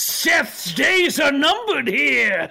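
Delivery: screaming, yelling in character voice. Playing a character during a falling-rock attack: screaming in character. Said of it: "And I start screaming".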